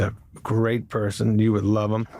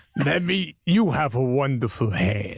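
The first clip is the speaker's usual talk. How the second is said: hungry cannibal character voice; 4 semitones higher than usual. Retelling how someone played Bernie Brillstein as a cannibal: Bernie Brillstein as a cannibal. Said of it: "Smigel used to do Bernie if he was a cannibal".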